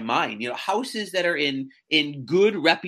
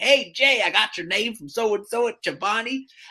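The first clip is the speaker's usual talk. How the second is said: heavy southern twang, laid on thick, pitched up; 6 semitones higher than usual. Retelling a man's phone call introducing himself, in a thick southern twang. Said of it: "Thick southern twang".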